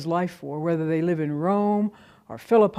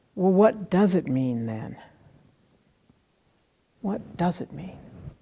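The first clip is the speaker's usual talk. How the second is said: tiny, very small, barely-there little voice. Retelling how a friend finally asked a professor, in a very small little voice. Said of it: "in a very small little voice".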